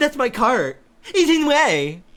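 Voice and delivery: mocking put-on voice. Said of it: "did that exact fucking voice to her".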